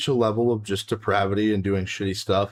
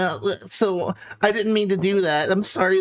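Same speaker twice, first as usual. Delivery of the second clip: dodgy weasel-like voice, high and drawn-out; 8 semitones higher than usual. Imitating how these types of people talk: mocking weaselly voice. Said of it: "fucking weaselly voices".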